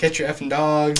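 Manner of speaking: acted-out outburst, losing it, freaking out. Telling about a dog encounter, acting out the dude, imitating a man freaking out. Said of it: "Like literally like freaking out".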